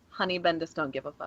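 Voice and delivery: very quiet, low, secretive half-whisper. Discussing a Marvel comic with co-hosts, the speaker is half-whispering really quietly. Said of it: "I'm just gonna whisper really quietly".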